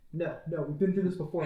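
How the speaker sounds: plain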